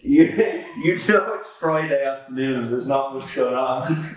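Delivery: laughing, holding back laughter while talking. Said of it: "I'm laughing now".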